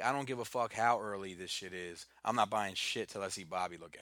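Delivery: ordinary talk, nothing marked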